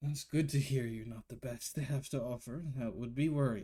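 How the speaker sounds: with a sigh. The dwarven fellow behind answers the group, sighing. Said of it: "gives out a sigh".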